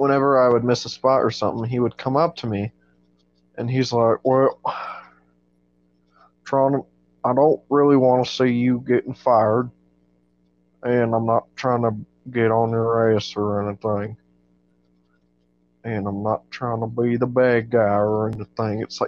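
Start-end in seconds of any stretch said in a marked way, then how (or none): 4.2-18.8 slow, drawn-out, long-winded voice. Retelling a coworker's slow warning about a missed spot: imitating slow-talking Trevor. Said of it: "took him about five minutes to say".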